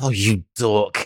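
mumbling under the breath. Narrating a game scene, the speaker voices a woman after she drops something: muttering to herself. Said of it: "mutters to herself".

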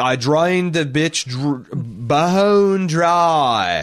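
very slow, bizarre, stretched-out drawl, leaning on dry. Quoting a film line in its bizarre accent: Nicolas Cage's bizarre accent. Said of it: "if I hear him say a phrase".

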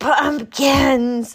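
loud, high cry of disgust. [name], remembering the smashed pumpkins, cries out in disgust. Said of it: "she cried in disgust".

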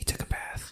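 very quiet, barely voiced whisper. Telling a joke to the other speakers, whispering the punchline for dramatic effect. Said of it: "Why'd you have to whisper that?".

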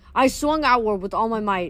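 ordinary delivery

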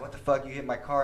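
usual speaking voice

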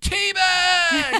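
mocking teasing voice. Storyteller acts out calling a man by a nickname he hates, retelling a teasing call-out. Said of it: "I'd be like".

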